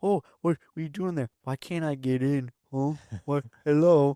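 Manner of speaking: high, dopey, dumb-sounding dog voice. Speaker shows the voice they do for their dog stuck at the door: dumb dog voice. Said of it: "So you make him sound really dumb".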